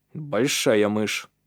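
dry, matter-of-fact delivery. Narrator reads a character's remark after a dull thud is heard, dry delivery. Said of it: "сухо произнес Калиб".

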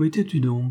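singularly softened voice. The host asks the young girl who enters with a lantern, in a singularly softened voice. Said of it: "d'une voix singulièrement radoucie".

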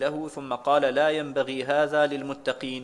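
ordinary delivery

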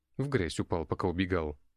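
ordinary delivery

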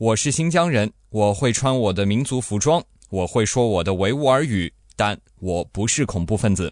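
normal talking voice

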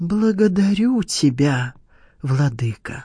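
trembling, quavering, shaky voice. A man, after listening long, thanks his lord once more; trembling voice. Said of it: "проговорил он дрожащим голосом".

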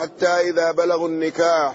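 ordinary delivery

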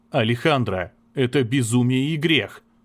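plain reading voice

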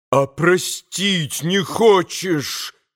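frenzied, bitter, slow, wild reproachful tone. Narrator reading a novel, a man shouting at a woman: frantic reproachful shout. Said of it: "прокричал Митя Грушеньке с безумным упреком".

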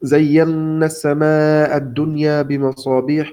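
ordinary talk

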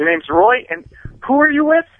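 high-pitched, loud, furious demanding voice.

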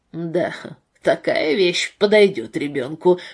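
low, contemptuous, disdainful, scornful delivery. A father turns from his wife to remark on his little daughter's picture, contemptuous. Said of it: "презрительно заметил он".

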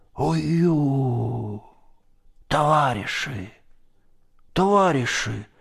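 high, faint, half-swooning babbling. Narrator voicing a man being put back into the boat, babbling half-fainting. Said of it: "лепетал он в полуобмороке".

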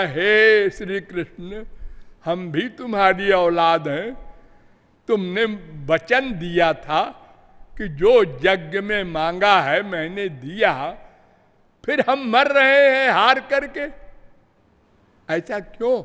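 plain

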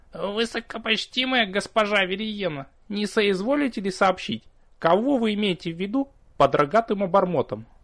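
thin, high, little bleating voice. A demon politely questions the vampiress, in a thin bleating voice. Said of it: "Тонким голоском проблеял".

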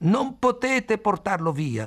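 high-pitched shout. Khalil objects to others taking a man away, shouting. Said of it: "urlò Khalil".

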